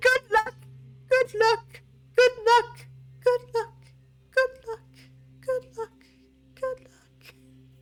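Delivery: very high-pitched voice echoing back and fading away. Narrating the echo of an announcement to adventurers, echoing voice. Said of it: "And it just echoes".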